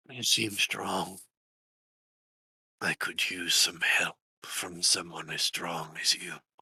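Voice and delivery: soft, hushed whispering voice. A voice reaches a player through a little spider, a soft whisper in the ear. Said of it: "Nira, you hear a voice. Something soft, almost like someone whispering in your ear. / Something soft, almost like someone whispering in your ear".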